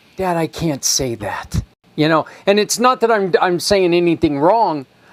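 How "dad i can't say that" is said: ordinary talk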